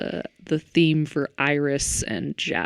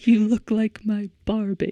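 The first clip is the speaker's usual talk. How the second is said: bad, high, terrible fake British accent; 6 semitones higher than usual. Quoting a funny line from the scene with the little girls: terrible british accent. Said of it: "Terrible British accent there".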